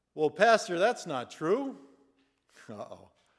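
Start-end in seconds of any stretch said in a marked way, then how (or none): 0.2-1.8 very loud, big, booming voice filling the room. Telling a joke about a choir member answering the pastor: booming voice Bob. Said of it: "Booming voice Bob".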